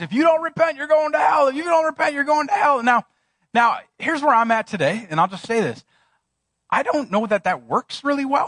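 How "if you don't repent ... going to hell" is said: mock, high, full-throated yell at the top of the lungs. Retelling a street preacher on a corner: imitating a man yelling. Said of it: "yelling at the top of his lungs".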